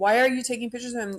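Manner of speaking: put-on yelling. Retelling how a lady confronted a man photographing kids: imitating someone yelling. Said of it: "yelling at him".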